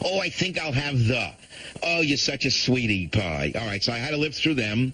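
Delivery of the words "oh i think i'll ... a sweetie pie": play-acted overly cutesy, sugary sweet voice. Mocking how the people ordering ahead of the speaker talked: mocking cutesy talk. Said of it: "Everything was like with a cutesy thing".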